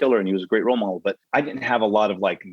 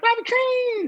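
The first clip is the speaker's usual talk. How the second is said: very high-pitched, called-out word. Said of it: "he's got that high voice".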